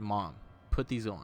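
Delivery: ordinary delivery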